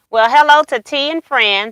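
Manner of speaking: plain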